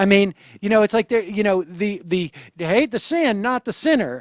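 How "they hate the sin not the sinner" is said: put-on American Southern accent. Quoting a familiar phrase about sinners: put-on Southern accent. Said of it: "I do that in a Southern, uh, accent".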